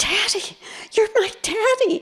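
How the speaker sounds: play-acted, very high, tearful bawling wail. Retelling a moment of recognizing a past-life father: imitating own past bawling. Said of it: "And I started bawling".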